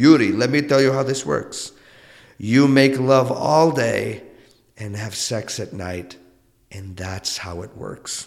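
put-on heavy, thickly laid-on Portuguese accent. Speaker quotes his mother's advice to him: heavy portuguese accent. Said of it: "she said this like in her heavy Portuguese accent".

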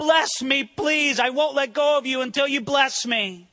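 desperate, begging cry, pleading for mercy. Retelling a wrestling match with god, retelling a pleading cry. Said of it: "he's crying out".

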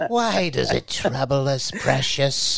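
put-on creature voice. Picturing Greg going home, the speaker does the Gollum thing: Gollum voice, talking to himself. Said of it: "doing the Gollum thing".

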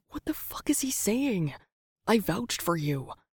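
whispered through gritted teeth. [name], straining to hold a smile, speaks to Sam; whispered through gritted teeth. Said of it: "whispered through gritted teeth".

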